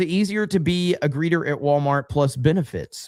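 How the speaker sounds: usual speaking voice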